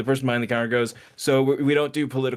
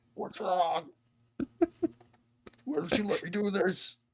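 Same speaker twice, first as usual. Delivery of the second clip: high woman's voice, pitching up, turning demonic; 8 semitones higher, 6 dB quieter than usual. Acting out an angry customer's line: MeatCanyon woman voice. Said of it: "the Meat Canyon voice of whatever Meat Canyon's voicing a woman".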